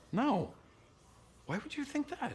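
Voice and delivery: gasp of shock. Accused of taking a lover, denying it, gasping in shock.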